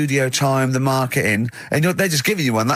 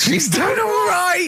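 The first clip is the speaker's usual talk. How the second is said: put-on very high old miner voice. Remarking on a woman's holiday arrangement: like a sixty-year-old miner. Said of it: "talk like you're 60 years old and you've been working down the mines".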